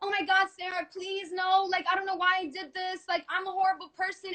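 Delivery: mock crying, desperate, tearful pleading tone. Retelling how a man begged her on the floor, imitating Adam begging and crying. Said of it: "He was on his the floor begging and crying".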